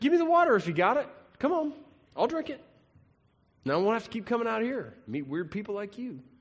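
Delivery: dry, sarcastic tone. Retelling the woman's reply about the offered water: imitating a sarcastic retort. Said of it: "there's a sarcasm in this".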